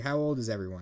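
ordinary talk

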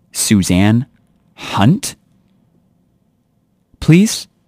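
play-acted, bitchiest, snottiest tone, swooping pitch. Retelling how a woman raised her eyebrows and said a name: imitating a bitchy tone. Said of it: "in the bitchiest tone that she could".

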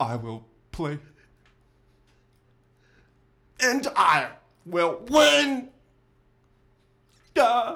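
low, slow character voice. Performing a monologue in character from High Speed. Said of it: "he brings that character to life".

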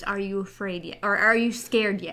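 whispered delivery. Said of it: "she literally whispers".

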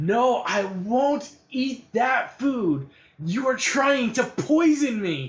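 shrill, high, dragged-out hollering. Voicing a patient heard down the hallway: yelling from a hospital room. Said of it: "you can hear, like, yelling".

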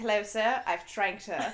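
put-on British butler accent. Retelling a show's plot, the speaker imagines the butler Stevens talking: British accent. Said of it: "I picture him with a British accent".

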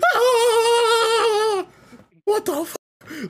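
very high, very slow, drawn-out, frightened cry. Telling a friend about seeing lights at the top of the hill, retelling freaking out. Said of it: "I'm freaking out".

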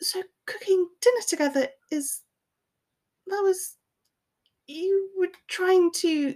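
strained, very high-pitched, squeezed voice. Narrator reads Hermione answering Draco, Hermione, strained voice. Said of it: "Hermione said in a strained voice".

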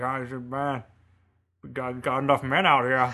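slow, mumbled, put-on old woodsman voice. Mocking an actor's role in The Revenant, speaker imitates an old woodsy guy. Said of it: "like this old woodsy guy who's like going around like".

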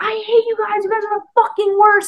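very high, loud, put-on shrieking scream. Act out what she says while pretending to be in a huge fight, imitating her screaming. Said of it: "she's like screaming".

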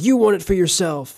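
accusing yell, pitched high. Retelling a scene about leaving the ring: imitating Bilbo Baggins yelling. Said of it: "yells at Gandalf".

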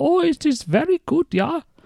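very high-pitched, fake put-on German accent. Describing how a movie character talks, doing a put-on German accent. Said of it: "he has that accent where he goes".

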